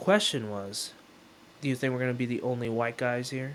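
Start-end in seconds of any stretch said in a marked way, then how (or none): 1.6-3.5 put-on very serious, dead-serious tone. Speaker retells a question a man asked him, in a very serious tone. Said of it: "In a very serious tone".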